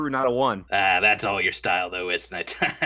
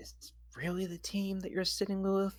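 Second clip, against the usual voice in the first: whispered, much higher and quieter; 11 semitones higher, 11 dB quieter than usual. The speaker's character whispers a question to Blex, whispered. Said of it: "And then I whispered to Blex".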